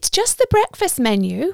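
composed, even, steady voice, pitched a little up. Narrator reads a woman answering Albert's sarcastic wife, keeping her voice steady. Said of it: "keeping her voice steady".

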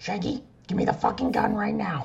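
very high-pitched cartoon mom voice. Trading impressions with a partner doing Shaggy, demanding the gun: Marge impression. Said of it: "I'll do my Marge impression".

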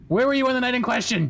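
high, menacing, intimidating goblin voice. Playing a goblin interrogating another character: intimidating goblin voice. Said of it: "goblin-y intimidation that I can muster".

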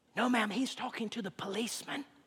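put-on very quiet, hushed, whispered little boy's voice. Telling a story where a little boy answers a caller's phone call, hushed little boy whisper. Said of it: "whispered voice of a little boy".

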